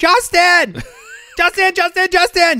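very high, loud, repeated shrieking scream. Retelling how Austin yelled for the ball when they were down there, imitating someone screaming. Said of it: "he just screamed".

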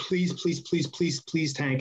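put-on desperate, repeated begging tone. Retelling how a man on his knees begged to hit him: imitating someone begging. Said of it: "and he's like".

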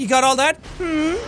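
patronizing, talking-down voice. Retelling how a character explained something: imitating a condescending tone. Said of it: "That was kinda condescending".

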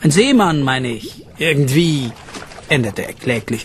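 plain reading voice

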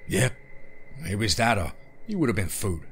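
ordinary delivery

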